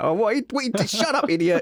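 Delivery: very high, irritated, pissed-off outburst. Retelling how his wife snapped during their podcast: imitating someone pissed off. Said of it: "she'd get all pissed off and she'd be like".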